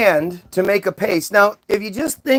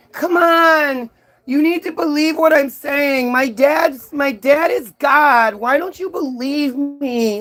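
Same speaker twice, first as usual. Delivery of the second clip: high, drawn-out, pleading whine; 6 semitones higher than usual. Retelling a Bible story, the speaker voices Jesus being questioned: imitating Jesus whining. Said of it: "Like he's just whining the whole fucking time".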